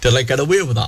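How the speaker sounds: ordinary talk, nothing marked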